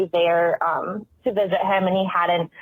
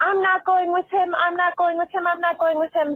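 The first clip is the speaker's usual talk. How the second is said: mock, very high, repeated shrieking scream; 11 semitones higher than usual. Retelling how a patient sat up in bed at night: imitating a patient screaming. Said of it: "starts screaming".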